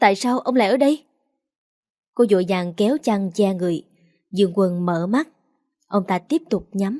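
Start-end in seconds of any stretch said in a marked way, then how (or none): 0.0-1.0 sudden shrieking cry. Linh Đan wakes and finds Dương Quân lying beside her, screaming. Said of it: "Linh Đan hét lên".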